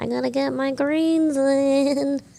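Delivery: put-on high, dorky, nerdy old-person character voice. Explaining why taking daily greens sounds nerdy, showing it in an old nerdy voice. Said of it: "Like that".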